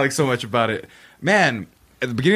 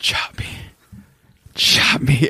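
mock quiet whisper, lower pitch; 4 semitones lower than usual. Acting out the quiet whisper heard before getting chopped: imitating a quiet whisper. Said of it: "the quiet whisper".

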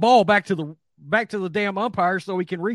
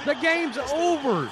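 screaming, higher pitched; 7 semitones higher than usual. Retelling own reaction while watching a play: imitating own past screaming. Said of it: "I started screaming right there".

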